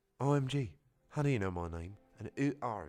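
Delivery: put-on British accent. Narrator redoing a character's line with a new accent: weird British accent as Wheatley. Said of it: "give him a weird fucking British accent".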